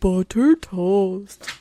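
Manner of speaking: booming, very loud, dim cartoon character voice. Recalling a habit of quoting a cartoon character: Ed from Ed, Edd n Eddy voice. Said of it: "Like the stupid Ed".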